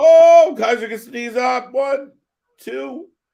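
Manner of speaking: high, loud, hyped play-by-play style counting.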